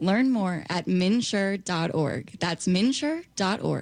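put-on slow, deliberate radio announcer voice. Asked to say the website in a radio announcer voice. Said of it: "say that in your radio voice".

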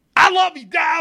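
loud, high-pitched yell.

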